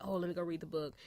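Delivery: ordinary delivery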